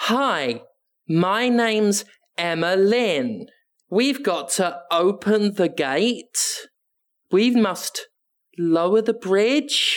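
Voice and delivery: very drawn-out, over-careful, slow, patronizing voice. Describing a favourite video game character's lines, slow, deliberate Emma Lynn voice. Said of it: "slow and deliberate".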